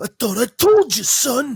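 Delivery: stern stage whisper. Acting out a dad talking to his son in front of friends, imitating a dad half-whispering. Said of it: "your dad whispering in front of your friends".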